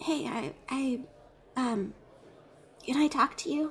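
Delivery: soft, close half-whisper, just under the breath. Voicing a slightly tipsy character who half-whispers to Cora: half-whisper. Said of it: "just kind of whisper".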